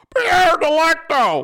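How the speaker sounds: very high, shrill, cartoonish holler. Speaker does his impersonation of how Wheels sounds when he yells. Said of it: "sounds a little bit like the cop from fucking Family Guy".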